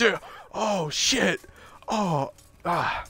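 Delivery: very slow, drawn-out, wounded cry of agony. Retelling how a kicked enemy reacts to his broken leg: imitating an enemy in pain. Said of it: "He's like".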